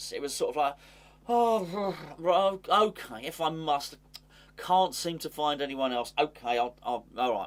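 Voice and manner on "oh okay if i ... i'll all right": play-acted slow, begrudging, reluctant going-along tone. Demonstrating how he read someone's comments: mock-reluctant, grudging tone. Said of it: "I'm going to try and do it in terms of the tone of my voice".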